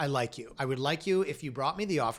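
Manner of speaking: plain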